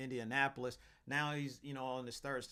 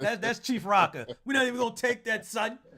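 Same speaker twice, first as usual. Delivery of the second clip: put-on New York accent, pitched up; 10 semitones higher, 13 dB louder than usual. Rejecting an idea about a quarterback, the speaker says it in a New York voice. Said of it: "I gotta say it in my New York voice".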